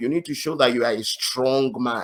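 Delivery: ordinary delivery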